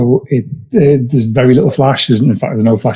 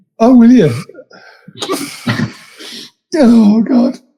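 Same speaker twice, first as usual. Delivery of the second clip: giggling through words, higher; 11 semitones higher than usual. Reacting to being handed the first question, laughing while talking. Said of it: "Breathe, breathe, [name], breathe".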